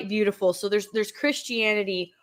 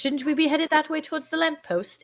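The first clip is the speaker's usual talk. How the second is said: bad fake British accent, pitched up; 7 semitones higher than usual. Speaker chimes in while another recalls Mister Tumnus: terrible British accent. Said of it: "Excuse my terrible British accent".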